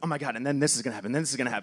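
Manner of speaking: fast, rushed, rattled-off words with excitement. The speaker acts out how they talked to people about a script, retelling fast talking. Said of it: "I would start to talk so fast".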